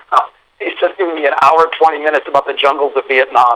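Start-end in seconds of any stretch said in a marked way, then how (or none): none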